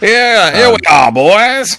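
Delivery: very loud, high put-on Texan tycoon voice. Quoting a film character giving a tour: Texan oil tycoon voice. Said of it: "in his best kind of, like, like, Texan oil tycoon voice".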